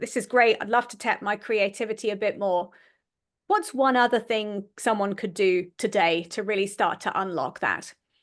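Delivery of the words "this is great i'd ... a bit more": normal talking voice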